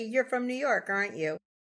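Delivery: ordinary delivery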